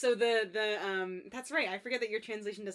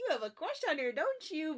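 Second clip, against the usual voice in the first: high, swooping, playful teasing; 7 semitones higher than usual. Retelling a teasing exchange about a crush, imitating playful teasing.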